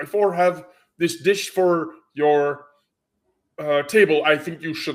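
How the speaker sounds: put-on heavy, strong Russian accent with broken, direct phrasing. Retelling how a girl walked up to their table with a dish: strong Russian accent. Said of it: "in the most direct Russian accent and says".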